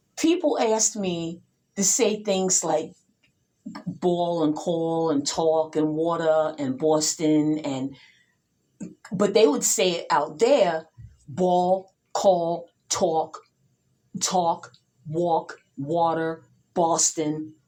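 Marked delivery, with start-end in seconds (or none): 11.3-17.5 put-on slow delivery without a New York accent. A New Yorker showing how people in Arizona said these words: without a New York accent. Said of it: "without the New York accent".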